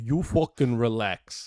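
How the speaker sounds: put-on New York accent. Friends trying out regional accents; say it in a New York accent. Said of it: "That's New York, isn't it?".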